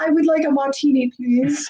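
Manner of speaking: put-on voice speaking as a dog. Looking at a photo of a dog in holiday wear, voicing the dog in the photo. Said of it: "He's like".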